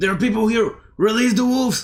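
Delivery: high, piercing, very loud in-character shout. Voicing an enemy who comes towards the players: shouting in character. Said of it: "he comes towards you and he shouts".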